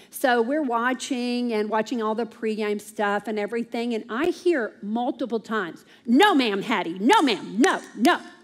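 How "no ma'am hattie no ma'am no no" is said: put-on sharp, stern, very harsh scolding tone. Retelling the kids repeatedly saying no during the Derby, imitating a very harsh tone. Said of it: "in a very harsh tone".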